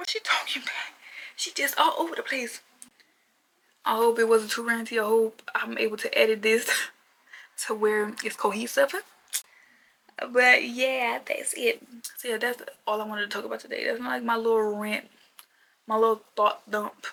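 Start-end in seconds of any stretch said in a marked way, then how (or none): 0.0-2.6 high, baffled whisper. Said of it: "You're like".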